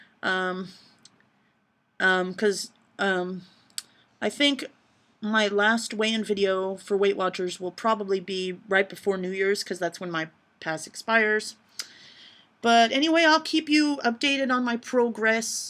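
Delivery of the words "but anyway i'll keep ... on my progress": bad put-on British accent creeping in. A vlogger talking to viewers, in a bad British accent. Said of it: "why am I turning British again".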